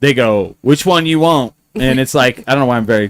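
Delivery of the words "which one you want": put-on country accent. Imitating DMV workers asking which license plate: imitating a country accent. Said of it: "I'm very, like, country today".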